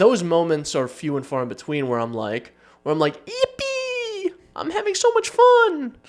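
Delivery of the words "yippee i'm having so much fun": very high, slowly stretched, exaggerated gleeful squeal. Acting out extreme excitement while gaming: exaggerated gleeful voice. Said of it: "That's what I sound like when I play video games".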